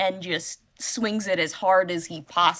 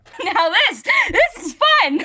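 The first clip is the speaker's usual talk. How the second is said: still laughing through the words; 13 semitones higher, 7 dB louder than usual. A character speaks over open comms, still laughing, laughing while talking. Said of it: "you can hear him uh still laughing".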